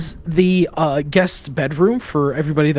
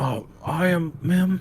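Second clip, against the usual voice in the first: very slow, soft mumble, mouth stuffed with food; 7 dB quieter than usual. Retelling how one of the women spoke up, imitating talking with a full mouth. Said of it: "speaks up with a full uh uh with a full mouth".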